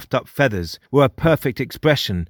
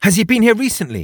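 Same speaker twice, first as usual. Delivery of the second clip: eager, very high, fast, excited rush of words; 9 semitones higher than usual. She asks her father a question, excitedly. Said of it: "She asked excitedly".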